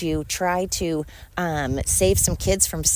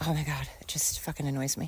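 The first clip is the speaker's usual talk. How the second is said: plain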